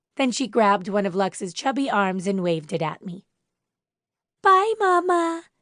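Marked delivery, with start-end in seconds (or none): 4.4-5.4 very high-pitched little voice. Reading aloud a character waving a baby's arm goodbye: high-pitched voice. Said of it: "she said in a high-pitched voice".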